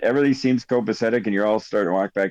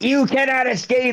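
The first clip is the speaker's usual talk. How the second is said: huge, very high, shrill, piercing scream; 14 semitones higher than usual. Telling what a voice says right now, acting out the biggest scream. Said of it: "it's like the biggest scream in your ear".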